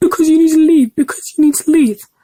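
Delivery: mock, high, insistent, repeated shouting. Retelling how a woman blocking the path ordered them out: imitating someone shouting. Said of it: "you don't need to be shouting at me".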